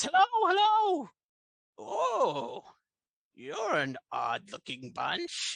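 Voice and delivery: very high, slow, swooping, drawn-out creature voice. Voicing a red cap named Iago greeting the party: Iago the red cap voice. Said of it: "this is a red cap".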